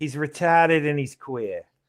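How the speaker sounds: thick Martha's Vineyard New England islander accent.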